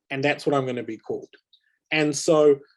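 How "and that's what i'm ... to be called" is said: ordinary talk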